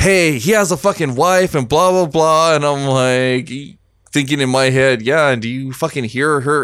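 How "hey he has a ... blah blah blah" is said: high, mock angry woman griping. Retelling another woman's outburst about someone's wife: imitating an angry woman. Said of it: "fucking gets all pissed off".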